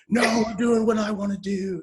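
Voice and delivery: put-on sudden eruption of anger. Acting out someone who suddenly insists on their choice: imitating a sudden outburst. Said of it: "you don't have to just suddenly erupt".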